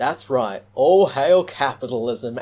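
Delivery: tongue-in-cheek, ironic, sarcastic delivery. Speaker introduces a mod he made for a game: sarcastic.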